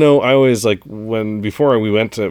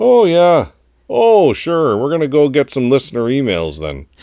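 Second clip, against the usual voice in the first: put-on sing-song North Dakota farmer accent; 4 semitones higher, 3 dB louder than usual. Show the others which accent you meant while introducing listener emails, in a North Dakota farmer accent. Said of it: "it's more kind of North Dakota farmer".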